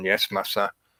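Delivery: mock obedient, facetious tone. Acting out an obedient servant's reply, deliberately facetious mock servility. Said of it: "I'm being deliberately facetious".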